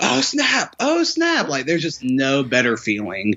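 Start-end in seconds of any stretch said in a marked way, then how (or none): 0.0-1.5 mock very high, long, excited, drawn-out scream. Retelling what the guy behind was screaming at the film: imitating someone screaming. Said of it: "I hear the guy behind me just screaming".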